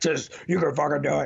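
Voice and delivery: blunt Marine Corps–style push. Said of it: "my Marine Corps side takes over".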